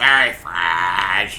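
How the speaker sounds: very low voice, "fresh" stretched long and slow. Quoting a comment on how someone looks, in Brooks voice. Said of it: "that's my Brooks voice".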